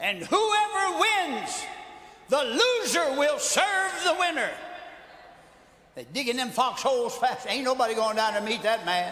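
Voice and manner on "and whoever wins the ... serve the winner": put-on giant voice, shouted, higher pitch. Retelling how Goliath came out and challenged the army: Goliath hollering out. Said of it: "he hollers out".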